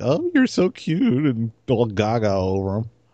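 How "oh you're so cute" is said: put-on high, slow, gushing girl voice impression. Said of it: "girls that were like".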